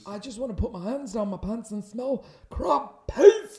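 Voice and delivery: booming, very loud, very slow, high, dragged-out put-on voice. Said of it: "my [name] impression".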